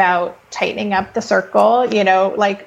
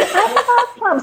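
put-on excited kid voice, higher pitched. Retelling a kid running up to a picnic blanket: imitating Ash, super enthusiastic about plums. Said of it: "the most enthusiastic you could ever be about plums".

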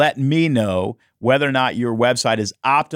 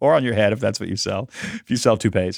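normal talking voice

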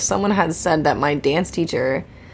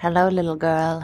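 acted creepy, predatory voice. Acting out a predator luring a child: playing a creepy predator. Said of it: "a predator trying to lure in a child".

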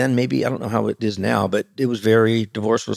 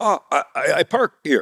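fake broken English, much higher; 5 semitones higher than usual. Retelling being told not to park, answering the woman in feigned broken English. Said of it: "pretend that I didn't speak English".

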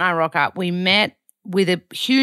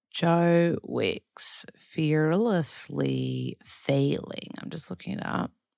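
put-on American accent, deliberate and very slow; 7 dB quieter than usual. Looking up an episode for the listener, slipping into an american accent. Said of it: "in an American accent".

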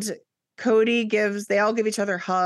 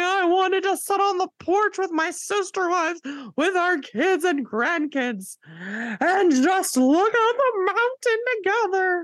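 fake sobbing cry, pitched way up high; 10 semitones higher than usual. Recapping a show to the other speaker, imitating Robin's fake crying. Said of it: "when Robin's fake crying".

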